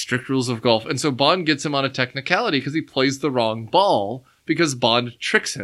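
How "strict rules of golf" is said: firm delivery, "golf" dropped flat.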